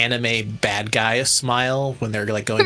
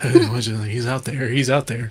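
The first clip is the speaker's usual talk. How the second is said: panicked, freaking-out outburst, "he's" drawn out. Retelling a meme video scene, imitating someone freaking out. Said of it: "freaking out".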